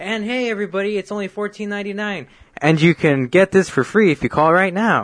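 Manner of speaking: put-on hyped sales voice-over. Describing how he sounds doing a voice-over, imitating his excited sales talk. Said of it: "he's talking excited like this".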